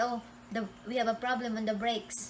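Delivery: ordinary delivery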